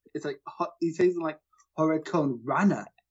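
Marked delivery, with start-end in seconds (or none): 1.7-2.8 put-on weird Japanese accent. Imitating how someone says a phrase: imitating a weird Japanese accent. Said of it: "he does this weird Japanese accent".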